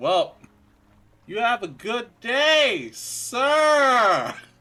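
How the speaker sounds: very loud call, shouted. Calling out to a passing character in the game: very loud call. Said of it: "you do hear very loud Morrow saying".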